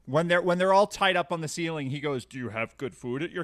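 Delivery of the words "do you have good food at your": put-on dopey voice, quieter. Speaker retelling what the character said while they were all tied up: Sindar's dopey voice. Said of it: "he does his dope voice".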